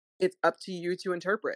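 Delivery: normal talking voice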